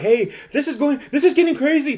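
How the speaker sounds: high-pitched whiny voice. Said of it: "Manny is arguing with son, like".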